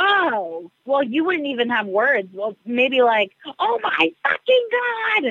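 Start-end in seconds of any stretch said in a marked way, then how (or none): 3.6-5.3 very high, drawn-out, stunned shocked shriek. Imitating another speaker's reaction to a surprise, as asked: imitating someone screaming in shock. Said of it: "imitate what I would do".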